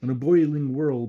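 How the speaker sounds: plain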